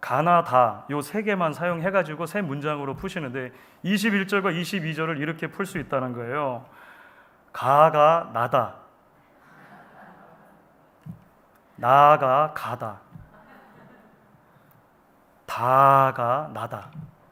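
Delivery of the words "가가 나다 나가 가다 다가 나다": very slow, drawn-out Gyeongsang-do dialect. Retelling how a pastor summed up two bible verses in three sentences, in gyeongsang dialect. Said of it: "경상도 사투리로".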